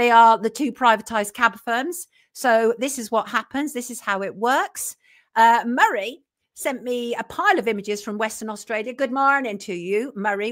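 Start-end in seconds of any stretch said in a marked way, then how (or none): 8.9-10.5 really bad put-on Irish accent. Greeting a listener who sent him images, in a really bad Irish accent. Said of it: "really bad Irish accent".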